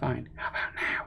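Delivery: breathy, hushed whisper. Answering a librarian who says to be quiet: whispering. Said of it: "I'm whispering".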